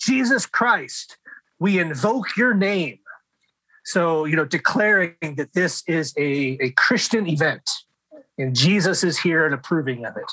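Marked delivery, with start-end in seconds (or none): 0.0-3.0 high, slow mock scream. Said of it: "and screams out".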